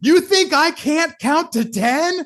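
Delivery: very high, drawn-out, lost-it yelling outburst. Retelling how a coach yelled at someone who skipped reps: imitating Nick yelling. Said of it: "he yells at".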